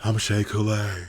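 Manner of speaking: put-on hot-breath voice. Imitating someone who sounds like Shea Coulee: Shea Coulee impression. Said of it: "Shay speaks like she has hot breath".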